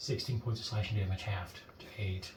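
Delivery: disappointed, breathy near-whisper murmur. Announcing halved damage to a player after a crit: disappointed. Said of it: "You sound so disappointed".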